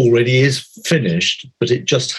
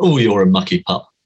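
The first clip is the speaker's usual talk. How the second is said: put-on teasing voice, lower pitch; 3 semitones lower than usual. Speaker describes the voice in her head when she spills things; imitating grandmother's teasing voice. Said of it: "my grandmother's voice in a very teasing".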